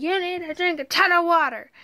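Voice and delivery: high-pitched yelled scolding. Retelling what the doctor said to her: imitating someone yelling. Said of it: "yelled at me".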